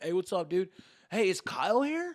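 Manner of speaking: casual bro talk. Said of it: "That's what my voice and everything".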